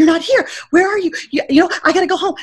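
mock crying, high, panic-stricken and tearful. Speaker retells phoning someone while crying in the Atlanta airport, retelling a panicked plea. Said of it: "crying, having a panic attack".

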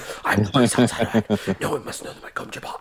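whispered movie-character voice. Annoying Ellie with an instant trick, whispered David Lynch Dune impression. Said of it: "I've been just whispering just random stuff... my impression of the David Lynch Dune".

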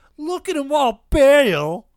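shrill, loud nerdy announcer shriek, "bail" stretched out. Recalling the wrestling broadcast line that took them off air, in Mike Tenay's nerdiest voice. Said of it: "in his nerdiest voice".

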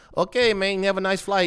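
very high-pitched, put-on Cuban accent. Retelling what another man said in reply: Cuban-sounding accent. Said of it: "you made him sound Cuban".

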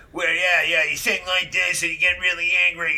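slight New York accent. Showing how the 70s punk style sounds: kind of a new york thing. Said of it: "I'm kind of doing a New York thing".

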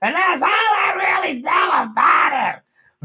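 horrible shrill voice, very high, very loud, drawn-out. Describing a late comedian's voice, then imitating it: horrible Gilbert Gottfried impression. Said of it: "that was probably a horrible impression".

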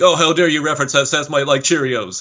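indignant, huffy, offended voice, high-pitched. Imitating an overreacting casual fan after a joke: impression of the casual fan. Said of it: "my impression of the casual fan".

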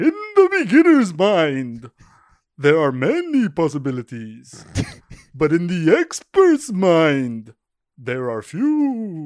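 very loud, swooping, booming vampire voice, few words stretched. Asked to read his words of wisdom as Dracula, Dracula voice. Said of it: "Should I try to read my words of wisdom in Dracula?".

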